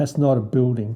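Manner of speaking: ordinary delivery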